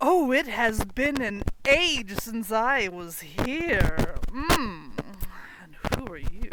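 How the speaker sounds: pleased, delighted, drawn out, savouring every word. Voicing a summoned figure who steps through and greets someone: delighted. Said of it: "he looks delighted. And takes a deep breath and goes".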